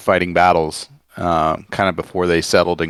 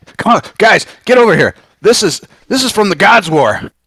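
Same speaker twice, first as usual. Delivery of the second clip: excited, thrilled high-pitched yell with swooping pitch; 7 dB louder than usual. A player's character calls Lorenzo and Leon over to something incredibly old: very excited yell. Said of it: "very excitedly uh, yell at Lorenzo".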